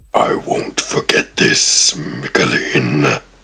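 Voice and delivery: deep, resonant voice. As Gub Gub soars away, speaking into Michaeleen's mind, deep resonant voice. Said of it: "you hear in the back of your head a deep, resonant voice".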